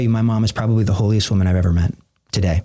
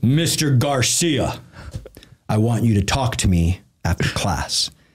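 slow, deliberate, booming priest voice. Retelling a priest summoning him after class, imitating Father Kelly's booming voice. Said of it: "he had a very booming voice".

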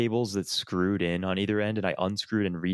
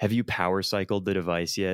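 usual speaking voice

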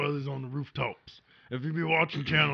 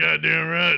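loud, put-on elderly man voice; 2 semitones higher, 8 dB louder than usual. Playing a character in a skit, speaking in an old man voice. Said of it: "This is how I sound when I get old".

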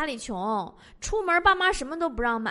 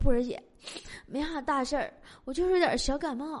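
put-on feeble, breathless voice; 4 dB quieter than usual. Retelling a hospitalized coworker's reply with mock weakness: imitating 蜜类's feeble, listless voice. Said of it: "一脸有气无力呀".

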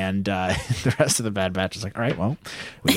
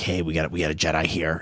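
put-on evil voice, lower; 3 semitones lower than usual. Retelling a scene where the Trandoshans find a lightsaber mark, weird evil Trandoshan voice. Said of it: "in their weird evil voice".

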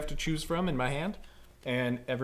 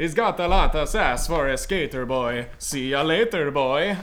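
very loud, put-on vampire voice; 9 dB louder than usual. Retrying a line after a failed voice attempt, in a vampire voice. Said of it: "to I'm gonna vampire".

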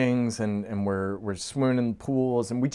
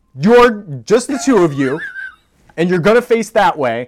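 higher, louder, insistent bossy tone. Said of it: "Holly's like".

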